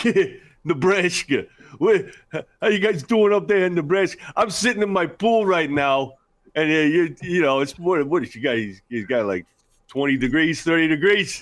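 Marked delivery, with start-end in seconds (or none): 0.0-8.6 heavy, pitched-up put-on New York accent, played straight. Retelling what a player's dad said on the phone: imitating a hardcore New York accent. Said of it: "just straight New York, like, hardcore accent".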